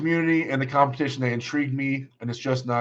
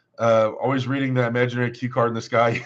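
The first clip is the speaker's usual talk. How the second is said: ordinary talk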